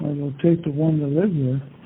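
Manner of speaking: plain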